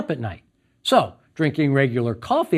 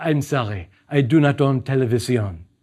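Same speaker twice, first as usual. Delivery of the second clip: lovely, beautiful put-on French accent; 2 semitones lower than usual. Quoting a woman's reply to the speaker's question, beautiful French accent. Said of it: "In a beautiful French accent".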